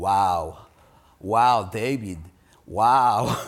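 imitated Israeli accent. Reading a psalm together, the speaker quotes Asaph in Asaph's thick Israeli accent. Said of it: "in his thick Israeli accent".

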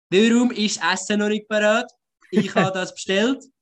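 demanding, griping Swiss German, voice pitched high. Speaker demonstrating the Swiss version of the joke, Swiss German Karen impression. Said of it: "the Swiss version would be ... It would sound like this".

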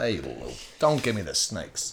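low put-on New York accent. Doing an impression of a woman, the speaker says her line in a New York-sounding accent. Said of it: "it just sounds like New York".

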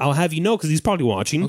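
plain

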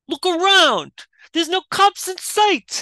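bad New York accent, pitched way up. Retelling a kid's line from a movie scene about kids stealing: bad new york kid accent. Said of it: "I'm doing a horrible rendition".

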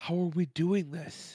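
whispering. Whispering to the other players in character so as not to get in trouble: whisper. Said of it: "I'm gonna whisper so I don't get in trouble again".

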